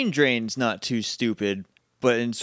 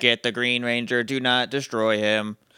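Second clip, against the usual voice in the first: mechanical robot voice. Retelling a Power Rangers scene, giving a villain's orders in a robot voice. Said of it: "In robot voice".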